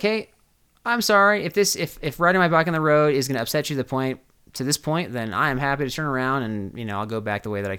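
normal talking voice

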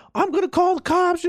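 very high, sudden, shrill shouting. Retelling how the cashier shouted back at a man: imitating a cashier shouting back. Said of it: "she just starts shouting back, like".

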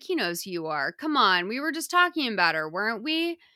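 fast, stern, no-nonsense reprimanding tone. Retelling a scene with a grandpa, quoting Joey; imitating Joey's stern voice. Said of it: "Joey's very stern when he says this".

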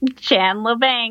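piercing character voice. Asked to share the impression, loud piercing Janice impression. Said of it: "it's pretty loud and piercing".

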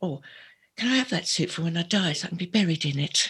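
put-on joking London cockney accent. Remembering what Janie said about Di's suit, imitating Janie's cockney accent. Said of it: "she was real cockney".

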